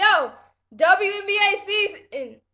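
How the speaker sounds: voice cracks. Looking forward to the WNBA season starting, voice cracking. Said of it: "Y'all heard my voice crack".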